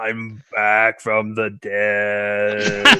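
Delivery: very quiet, low zombie drone, dead and stretched. Retelling what she said to them on getting up, best zombie voice. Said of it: "her best zombie voice that she possibly can".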